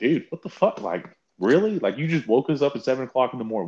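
mock annoyed griping. Retelling how players reacted to a coach waking them early for a short speech: imitating annoyed players. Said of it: "So they're all like".

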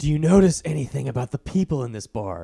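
imitated raspy male voice. Quoting a date's question at a bar in a raspy man voice. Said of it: "With that type of raspy man voice".

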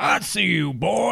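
very slow, rough, cartoonish drawl. Retelling what a man said on spotting the speaker backing away: Foghorn Leghorn voice. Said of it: "that sounded like foghorn, leghorn".

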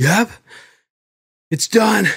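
heavy breathing, almost crying. Retelling a helmet cam video of a blown-up bike: imitating someone breathing heavy, almost crying. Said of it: "breathing heavy and, like, almost crying".

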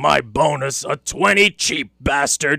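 very low, muttered, grumbling mumble. A man, handed a twenty as his bonus, turns away grumbling. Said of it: "he grumbled".

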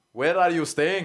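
put-on terrible German accent. Retelling an Only Fools and Horses joke: terrible German accent. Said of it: "it was a terrible joke, accent".

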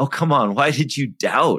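playful teasing. Imagining a question to a doubting follower, the speaker acts out a joking tone. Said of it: "saying it in kind of a joking way".

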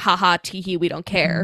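ordinary talk, nothing marked

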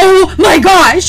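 very high, loud, panicked exclamation. Retelling walking in to a friend with a contoured face: imitating panic. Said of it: "panic mode".

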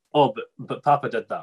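normal talking voice

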